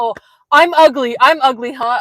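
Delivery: high, very loud, slow, drawn-out yell. Retelling a man who yelled at them in their van, imitating someone yelling. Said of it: "starts saying all these other things and like yelling at us".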